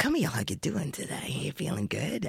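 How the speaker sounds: sly, cunning fox voice with a rough snarl. Explaining how a cunning fox talks, the speaker demonstrates a cunning fox voice with a slight snarl. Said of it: "a little bit of a snarl in the curl of his way he speaks".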